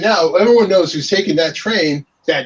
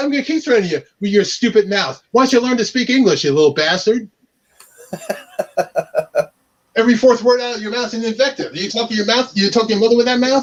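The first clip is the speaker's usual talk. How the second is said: angry, hard scolding tirade; 4 semitones higher than usual. Retelling scolding a man on a train: retelling his own angry scolding. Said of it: "this is me on a train scolding this guy".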